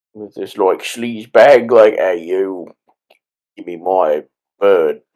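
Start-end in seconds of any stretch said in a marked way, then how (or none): 2.0-5.0 slow, sleazy, put-on Cockney accent. Voicing a sleaze bag character during movie commentary: Cockney accent. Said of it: "I just do that Cockney voice a lot".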